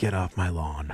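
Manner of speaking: put-on snobby grumbling. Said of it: "I was so snobby".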